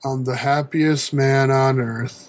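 mock-convincing, clearly unconvincing. Recounting how a new champion ended his speech, retelling an unconvincing line. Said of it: "a very convincing".

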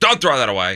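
put-on Russian accent, old woman's voice. Speaker retelling his wife's grandmother's words to his wife, imitating a Russian accent. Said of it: "just imagine that in a Russian accent".

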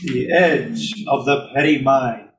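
very loud, slow, deliberate shout. Repeating the question after being told to yell: yelling. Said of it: "Say it louder".

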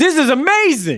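very high, giddy, excited gushing. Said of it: "Riri is geeking out on this".

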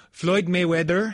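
lightly lilting, sing-song put-on Filipino English accent. Showing how the boxer's name is said in the Philippines, sing-songy Filipino accent. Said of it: "I apologize for putting on an accent here. It'd be... Something like a little sing-songy".

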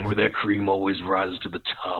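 big macho showman wrestler voice. Asked to do Macho Man talking about getting coffee: Macho Man voice. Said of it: "I guess you could just do your macho man".

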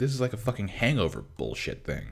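play-acted heated, fired-up outburst. Retelling own reaction while watching a movie: imitating own heated outburst. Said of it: "This movie got me so, like, so heated".

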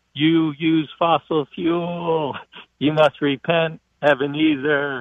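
slow, drawn-out, spooky, haunting ghost voice. Caller on a show mocking Elizabeth Warren, Elizabeth Warren as a ghost. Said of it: "she sounds like the ghost".

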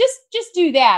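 high-pitched, loud, insistent delivery.

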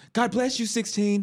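very high, piping voice. Retelling what the guy who knocked him down said, imitating a high-pitched voice. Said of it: "he has a very like [name]-esque high pitched voice".

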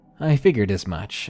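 ordinary delivery

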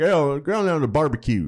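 put-on Idaho accent. Showing how he always voices a man from Idaho: put-on Idaho accent. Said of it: "They don't sound like that in Idaho".

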